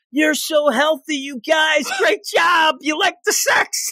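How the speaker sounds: play-acted shrill yell, pitched very high. Retelling what a mother yelled at her children: imitating someone yelling. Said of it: "And she's yelling".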